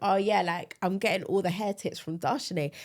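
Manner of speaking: usual speaking voice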